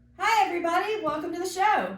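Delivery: very high, big, loud, energetic show-host voice. Redoing a show greeting after being asked to go bigger: bigger, more energetic show intro.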